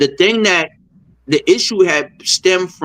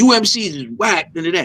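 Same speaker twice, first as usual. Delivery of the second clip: slow, offhand, dismissive tone. Retelling how Chris insulted them from the stage: imitating Chris's dismissive diss. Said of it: "He said it like".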